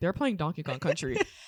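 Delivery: put-on, utterly serious, dropped very low. Retelling what a man said about the game they were playing, retelling a very serious tone. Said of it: "In the most serious tone".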